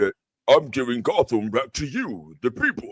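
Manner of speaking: extra-bass deep voice. Asked by friends to do the extra-bass voice again, deep bass voice. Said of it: "The bass one, the deep".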